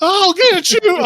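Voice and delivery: very high voice cracking partway through. Voicing a character's failed attempt to intimidate an enemy: voice cracking. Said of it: "but your voice cracks".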